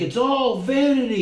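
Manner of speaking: put-on very high-pitched screamed crying outburst. Retelling how the preacher opens Ecclesiastes, imitating a scream. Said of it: "it's like he's screaming".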